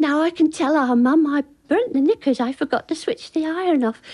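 put-on small, plaintive little girl voice. Retelling a child speaking up while the classroom rejoices: imitating a plaintive little voice. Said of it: "this plaintive little voice".

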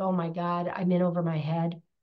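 put-on tearful, crying voice. Retelling being a hot mess trying to do it all: imitating own past crying. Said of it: "crying like".

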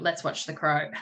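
ordinary delivery

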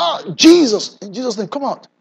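put-on sudden, sharp, shouted cry of pain. Speaker retells a sudden pain in his leg while walking, retelling his own shout. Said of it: "And I shouted".

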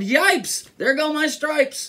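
very high, shrill, squealing yell. Narrator reads the zebra's line amid the animals' chaos, yelling. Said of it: "The zebra yelled".

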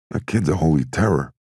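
usual speaking voice

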